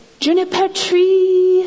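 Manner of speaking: Thai accent, high pitch, "tree" drawn out. Explaining how to say the guest house name to a driver: thai accent. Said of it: "with a Thai accent".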